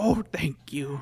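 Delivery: strange voice repeatedly broken by coughs. Playing a game, voicing a honey badger thanking the player: weird coughing voice. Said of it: "in a weird coughing voice says".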